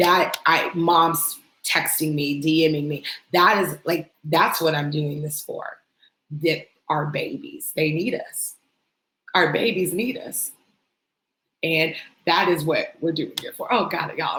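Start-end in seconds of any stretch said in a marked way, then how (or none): 6.4-13.7 tearful, choked-up crying speech. Addressing her audience, the speaker explains what she does this for, crying while speaking. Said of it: "I'm crying".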